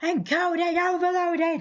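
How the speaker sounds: very high-pitched, loud mock yelling.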